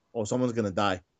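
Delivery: mock deadpan delivery. Quoting an announcer's reaction after she kissed him and Rusev came out, imitating a deadpan remark. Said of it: "Booker T deadpan goes".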